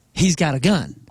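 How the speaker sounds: plain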